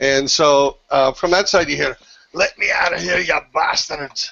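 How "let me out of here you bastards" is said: put-on higher-pitched dwarven fantasy accent. The game master voices someone calling out from the side: dwarven accent. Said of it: "it sounded like a dwarven accent".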